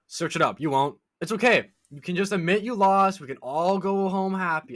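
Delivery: sarcastic, soothing, high-pitched consoling tone. Retelling an argument with a man who doubted the address: retelling sarcastic trash talk. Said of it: "I'm trying to do that like sarcastic".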